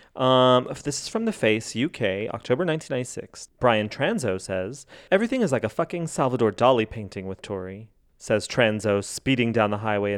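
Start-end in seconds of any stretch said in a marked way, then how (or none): none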